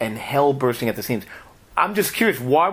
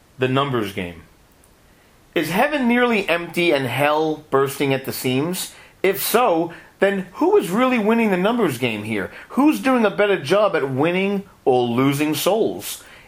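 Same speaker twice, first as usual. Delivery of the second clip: expressive reading aloud with much inflection. Reading a listener's question aloud to the co-host: reading with added inflection. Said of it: "put your own voice inflection on it".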